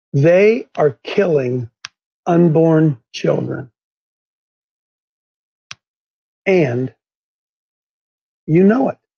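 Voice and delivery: very slow, carefully paced, deliberate words. Speaker tells the folks listening he will say this very slowly. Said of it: "I'm going to say this very slowly".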